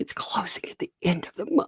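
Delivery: put-on high, upset, whispered little girl voice. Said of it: "but she's like".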